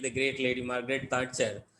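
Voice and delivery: flat, sarcastic stress on "great".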